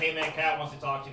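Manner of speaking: plain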